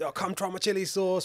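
put-on loud, high, shouty East London Cockney accent. Recalling his group turning up beside jam and biscuit sellers, retelling a loud Cockney shout. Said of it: "loud, shouty Cockney".

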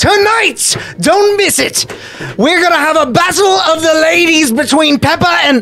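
very high, loud, hollered shouting. Voicing a character announcing a fight to the bar: shouting announcement. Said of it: "starts shouting".

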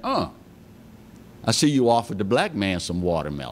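dry, dead serious deadpan, no laugh. Retelling a joke they made to a woman, reenacting own deadpan delivery. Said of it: "looked at her with a straight face and said".

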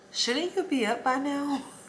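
small, sweet, soft high voice. Retelling what a voice said while something knocked at the back door, small sweet voice. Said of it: "a small, sweet voice was just like".

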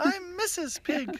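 very high, squeaky, playful put-on character voice. Saying the first one should have been Mrs. Pig: high Mrs. Pig voice. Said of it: "In a higher voice".

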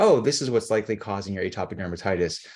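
plain

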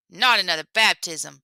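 sharp, snapping. Compère Bouki, replying to Lapin calling out again, snapping. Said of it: "snapped Compère Bouki".

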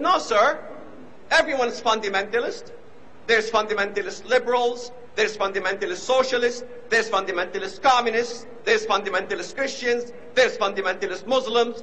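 normal talking voice

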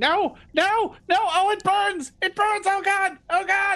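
very high, agonized kobold screaming. Telling the players what they hear: a kobold screaming in pain. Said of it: "You hear a kobold screaming".

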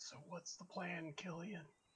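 very hushed, high, conspiratorial sidelong half-whisper. Voicing a character who shields his visor and asks Killian the plan: half-whispering. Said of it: "kinda whispers to Killian".

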